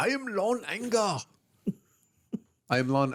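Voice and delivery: put-on German accent. Doing a German voice after being asked: put-on German accent. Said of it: "do your German voice?".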